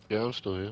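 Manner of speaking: worn-out, drained, sapped, low-energy voice. Answering another speaker who asks if they are still there: sounding drained. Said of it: "You sound like you're on two percent battery".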